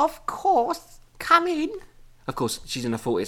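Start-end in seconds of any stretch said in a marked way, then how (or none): 0.0-1.7 put-on very high-pitched elderly woman voice. Reading a frightened woman's line to visitors at her door, in an old lady voice. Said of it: "I've had to give her an old lady voice".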